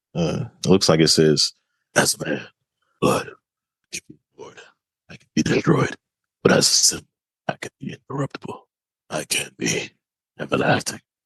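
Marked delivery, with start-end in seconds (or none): 1.9-10.9 gravelly, rough superhero voice. Reading a quote aloud after being asked to: Batman voice. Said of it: "talk in a Batman voice".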